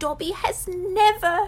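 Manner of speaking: ordinary delivery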